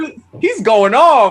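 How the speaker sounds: high, loud, amused laughing voice. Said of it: "I'm like".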